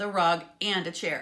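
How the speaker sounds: ordinary delivery, nothing marked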